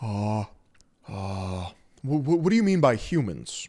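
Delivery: slow, stumbling, halting delivery. Answering a question as an impression: Peter Thiel impression. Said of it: "I'm doing a Peter Thiel impression".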